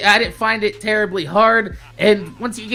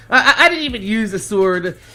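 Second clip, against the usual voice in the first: plain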